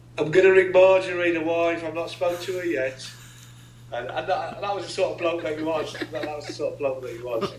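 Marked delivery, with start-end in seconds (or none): 0.2-3.1 put-on plain, matter-of-fact delivery in Birmingham accent. Retelling a man's answer to an interviewer's final question, in Bob's Birmingham accent. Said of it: "in his Birmingham accent".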